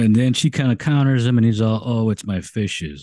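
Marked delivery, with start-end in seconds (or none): 1.9-3.0 slow, zoned-out, sedated drawl. Retelling a film scene, quoting the neighbor's reply: imitating a slow, sedated voice. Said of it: "it's very sedated".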